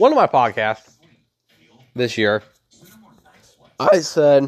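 loud line with voice breaking partway through. Podcaster recalling what was said on an earlier episode: voice cracking. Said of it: "nice voice crack".

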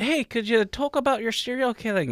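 put-on poorly done Irish accent. Podcast host imagining what Rachel could have asked them, in a bad Irish accent. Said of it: "That was a terrible accent".

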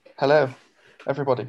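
flat, level, unvaried monotone. A guest just welcomed onto the podcast greets everybody, in a monotone. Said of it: "The most monotone "Hello" I've ever heard you say".

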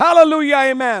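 high loud admiring shout. Preaching to children about giving the soul back: shouting praise. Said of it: "I'm just old-fashioned enough to shout".

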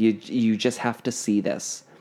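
ordinary talk

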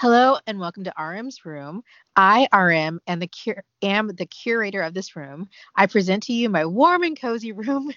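reading aloud while laughing throughout. Reading out someone's words in their own wording, laughing while reading. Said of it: "Sorry, I'm laughing for another reason".

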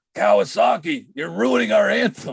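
mock high, rough yelling. Retelling a fan yelling at a player during the anthem: imitating a fan yelling. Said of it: "he just yells out".

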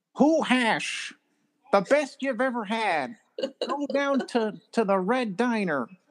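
high voice pushing toward a shout, barely held back. Riffing on lines David Lynch might say: David Lynch voice, held-back shouting. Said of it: "I'm doing my best David Lynch voice, but I can't do it without shouting".

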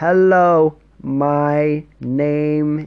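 very slow, loud, drawn-out, deliberate careful speech. Speaking English to an older person in the U.S., very slow, deliberate speech. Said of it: "I'm speaking slowly, like".

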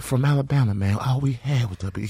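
sorrowful, mournful little lament. Speaker quotes what a man told him, imitating his sad tone. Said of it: "He said it so sad".

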